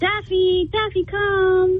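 soothing voice for a dog. A caller shows the voice they use with their dog, in a dog-talking voice. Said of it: "can we hear your dog voice now".

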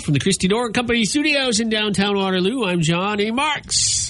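ballpark announcer delivery. Show host signs off with his name from the studio: baseball announcer voice. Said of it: "I was trying to say it like a baseball announcer".

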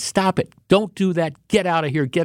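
put-on angry motherly voice, scolding tone. Describing how two workers yelled at someone: mock scolding, like a mom. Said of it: "can you imagine your mom scolding you".

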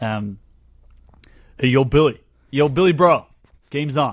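loud, casual put-on American accent. Asked to talk like an american, the speaker tries an american accent. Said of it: "I'll try an American accent for you".

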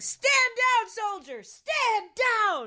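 very high, very slow, drawn-out screaming. Retelling screaming at a man he stood over while asleep, retelling a scream. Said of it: "I woke up as I was screaming at him".

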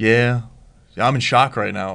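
put-on flat, deadpan, monotone voice. Contrasting a player's field celebrations with his interviews, doing a Joey Bosa deadpan impression. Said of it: "Just a deadpan voice".

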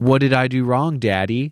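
put-on, mocking tone. Recounting a movie scene's falling out, imitating Bogdanovich's mocking tone. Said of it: "Like in this very mocking tone".

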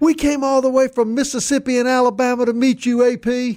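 very high, shrill scream. Retelling how a daughter pushed to the front of the line: imitating someone screaming. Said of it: "she starts screaming".

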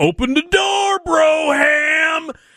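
mock shrill scream, very high, slow, drawn-out. Retelling Brokenleg kicking the doors, retelling Brokenleg screaming. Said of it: "he's screaming".

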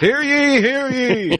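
very high, proclaiming town crier voice. Speaker imagines a town crier reading bill titles aloud, town crier voice. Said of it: "I imagine there's a town crier reading".

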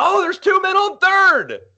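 high, slow, excited radio play-by-play call. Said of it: "you heard him get excited. He's like".

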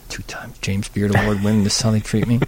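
mock muttering under breath. Retelling how they react when told to wait for a table, muttering under breath. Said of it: "I get under my breath and I go".

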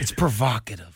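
hammy, cheesy, salesy romance-novel delivery. Speaker repeats a word after being told it sounds weird, like trying to sell something. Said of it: "You sound like you're trying to like sell".

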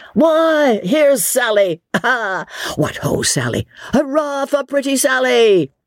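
very high, hearty, drawn-out cheering shouts. A crowd greets sally as she comes in, shouting a greeting. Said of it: "she was greeted with shouts and chorus of applause".

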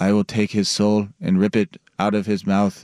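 flat, monotone put-on voice. Retelling a UFC fighter's line from a Key and Peele segment, monotone. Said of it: "he's just like so monotone".

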